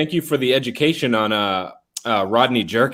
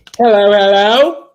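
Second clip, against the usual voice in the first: very loud, high, put-on British accent; 9 semitones higher, 9 dB louder than usual. Welcomed on by the host, the guest says hello in a fake british accent. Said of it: "British. I don't know why I did that".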